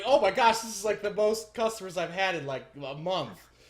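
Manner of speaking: super giddy, very loud, high excitement. Voicing a man pouring dwarven ale for new customers: super giddy and excited. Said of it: "He's like super giddy and excited".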